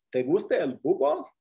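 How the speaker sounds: voice climbs on fútbol, question-like tune. Teaching how a Spanish statement becomes a question, rising question intonation. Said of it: "with just a question in your voice".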